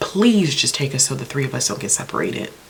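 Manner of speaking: ordinary talk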